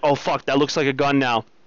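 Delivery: normal talking voice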